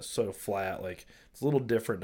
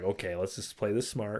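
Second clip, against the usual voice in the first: ordinary talk, nothing marked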